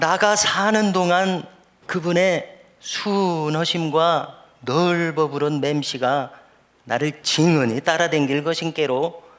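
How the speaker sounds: Jeolla dialect accent. Giving another regional version of the line, in a Jeolla accent. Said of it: "또 전라도 버전이 있습니다".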